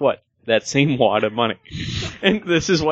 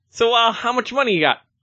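put-on Brooklyn-accented voice; 10 semitones higher than usual. Retelling a conversation, doing the other person in a Brooklyn accent. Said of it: "It was very much like that Brooklyn".

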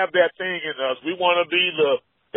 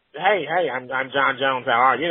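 nerdy put-on voice; 5 semitones lower, 3 dB quieter than usual. Imitating Jon Jones introducing himself, nerdy Jon Jones voice. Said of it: "you can almost hear that Urkel tone in John Jones' voice".

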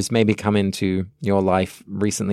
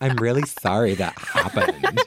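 very insincere, super sarcastic tone; 2 semitones higher than usual. Showing how Vanessa's apology comes out, imitating Vanessa's sarcasm. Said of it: "sometimes she sounds super sarcastic".

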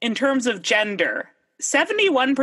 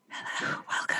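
whisper, much quieter. Mocking up a whispering podcast, a host greets listeners: whispering. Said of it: "I can't do accents and whisper at the same time".

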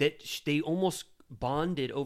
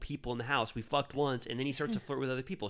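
plain

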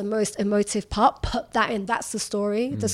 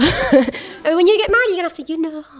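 fake, high-pitched northern English accent; 7 semitones higher, 7 dB louder than usual. A journalist quotes a woman who once questioned them, in a put-on northern accent. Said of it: "she didn't have a northern accent. I don't know why I'm doing that".

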